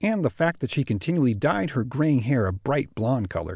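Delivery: ordinary delivery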